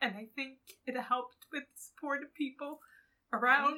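crying, very high-pitched, loud and tearful. Sharing a personal story with others, crying. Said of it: "even though I'm crying now".

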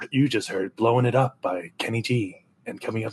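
very low, deep, smooth jazz radio DJ voice. Co-hosts joking on their show, announcing a track; smooth jazz radio dj voice. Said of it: "this is just smooth jazz".

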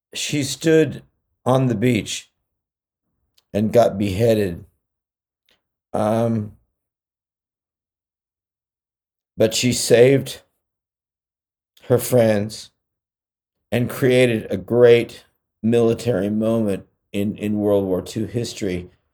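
tearful voice on the verge of crying. Telling the story of a group's leader, the speaker is on the verge of tears. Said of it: "I'm sorry if I'm going to cry a little bit".

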